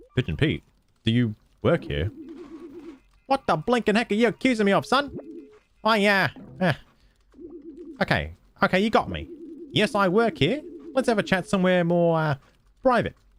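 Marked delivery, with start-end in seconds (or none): 3.3-13.2 put-on sailor talk, laid on thick. Voicing a character questioned by Flint, in a Pigeon Pete sailor voice. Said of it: "I can finally stop talking like a sailor".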